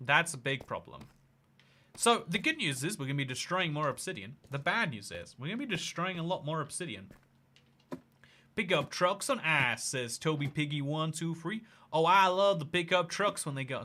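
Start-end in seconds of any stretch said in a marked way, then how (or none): 11.9-13.8 put-on Texan accent. Reacting to a chat suggestion about pickup trucks on ice: texan accent. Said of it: "this is the voice you have to do for pickup trucks".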